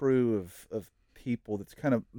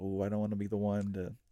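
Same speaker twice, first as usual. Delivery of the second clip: put-on timid, meek voice, lower and quieter; 3 semitones lower, 6 dB quieter than usual. Imagining the crowd's mindset as it goes quiet: imitating meekness. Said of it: "that similar meekness of".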